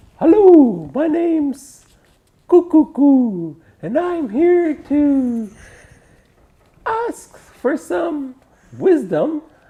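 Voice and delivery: high, slow, proud owl character voice. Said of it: "So, proud owl".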